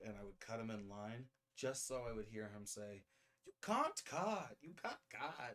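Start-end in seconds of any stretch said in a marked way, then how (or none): 3.4-5.6 loud, sing-song, drawn-out put-on German accent. Retelling what a man said when he cut ahead of him in line, german accent. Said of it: "he had a German accent".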